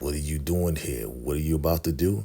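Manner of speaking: mock sinister, menacing, evil, threatening tone. Retelling a show scene, quoting the villain: imitating a menacing voice. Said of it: "Real menacing, real evil".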